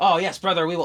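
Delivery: loud, small kobold creature voice. A game master retelling how he answered a player's character; little kobold voice. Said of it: "I spoke in my little kobold voice".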